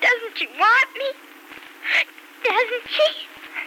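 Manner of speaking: slow, tearful, weeping through the words. A child asks her aunt whether her mother wants her, crying. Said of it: "you're going to stop crying".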